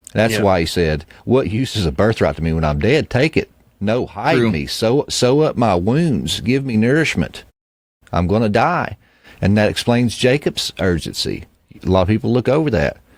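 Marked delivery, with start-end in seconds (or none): none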